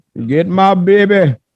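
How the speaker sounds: high comic character yell. Retelling a man's shout from a news story: Fat Bastard voice. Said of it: "Why he sound like Fat Bastard?".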